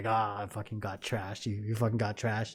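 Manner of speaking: mad, angry, berating scolding rant. Retelling a drunken night, imitating the wife who was mad: imitating an angry wife. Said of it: "she was all mad and she was like".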